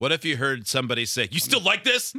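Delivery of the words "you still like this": mock angry, very high-pitched voice. Acting out an overheard line: imitating an angry voice. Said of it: "In kind of an angry voice".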